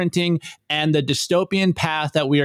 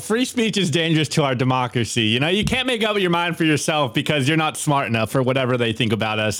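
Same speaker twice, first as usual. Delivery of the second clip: heavily ironic, sarcastic, swooping sing-song. On a show, answering the other host's request for his take, sarcastic. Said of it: "I'm being sarcastic".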